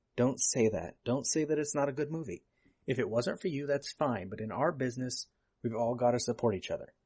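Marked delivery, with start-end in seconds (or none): none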